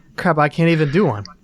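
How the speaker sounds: ordinary talk, nothing marked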